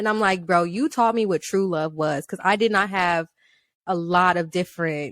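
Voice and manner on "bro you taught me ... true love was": ordinary delivery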